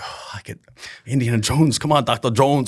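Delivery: thrilled, excited, eager can't-wait outburst. Retelling own words on seeing a famous client: imitating own excited voice. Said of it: "I'm so excited".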